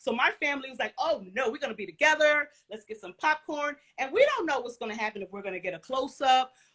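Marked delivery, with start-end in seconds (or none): none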